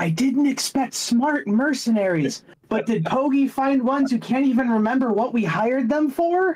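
loud, high stage whisper. The lord turns to a nearby goblin and speaks in a loud stage whisper. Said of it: "loudly whispers".

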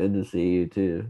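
mock lifeless, flat, unenthusiastic going-through-the-motions delivery. Mimicking the other speaker's greeting: imitating an unenthusiastic reply. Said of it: "my elementary school teachers would respond that way".

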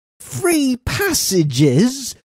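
piercing shriek, pitched very high, shrill. The narrator's companion reacts during an interview, screamed. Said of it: "screamed my companion".

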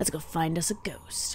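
soft, quiet, stealthy whisper.

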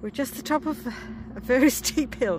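breathless, panting and puffing between words. At the top of a very steep hill, speaking while panting. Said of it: "so I'm panting".

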